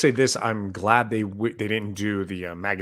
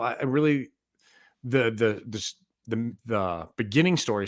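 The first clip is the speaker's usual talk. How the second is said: stammering, tripping over words. Speaker describing a story they enjoyed, stuttering. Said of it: "sorry, stuttering there".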